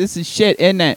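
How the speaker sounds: put-on kid-like delivery with British child's accent. Retelling what someone's grandson said: little kid british accent. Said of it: "good at little kid British accent".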